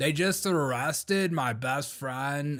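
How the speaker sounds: slow, soft, calm, mock chill delivery.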